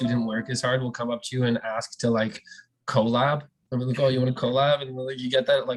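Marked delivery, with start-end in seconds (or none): none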